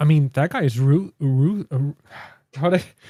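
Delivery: stammered false start, stuttering on ru-. Discussing a story's villain with a co-host and listeners, stuttering. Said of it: "sorry guys, I'm stuttering today".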